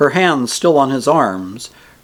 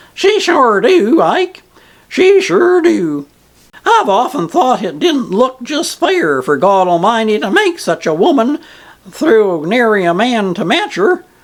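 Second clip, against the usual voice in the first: squeaky emphatic voice, higher; 8 semitones higher than usual. Reading aloud an old ferryman's reply: squeaky, emphatic voice. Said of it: "with all the emphasis possible in his squeaky voice".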